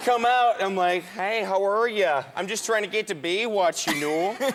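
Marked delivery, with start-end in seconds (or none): 1.0-4.4 put-on Minnesota accent. Retelling greeting gangsters who pulled up while he was heading to baywatch, minnesota accent. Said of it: "I'm doing the Minnesota".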